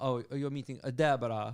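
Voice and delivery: very thick, put-on Italian accent. Retelling checking in for a tour in Milan, the reply in a super thick accent. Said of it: "in super thick accent".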